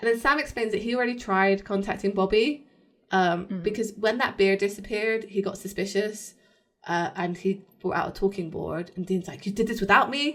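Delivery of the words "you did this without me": mock irate, angry, accusing tone. Recapping a show episode, speaker acts out a character's line, mock-angry. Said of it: "Like, angrily".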